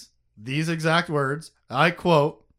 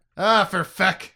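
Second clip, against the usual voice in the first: light put-on accent, Irish or Scottish; 3 semitones higher, 3 dB louder than usual. Saying a space swear with a bit of an accent: put-on Scottish or Irish accent. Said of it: "it got a bit of an accent".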